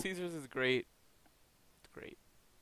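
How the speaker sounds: speaking through laughter. Answering a doubtful question in a casual chat, laughing while speaking. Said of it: "Because I'm laughing".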